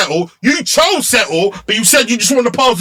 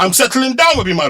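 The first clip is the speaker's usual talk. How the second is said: plain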